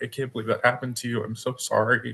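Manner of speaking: crying, teary delivery. Recounting a woman's reaction to the disclosure, imitating someone crying. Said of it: "she just started crying and she's like".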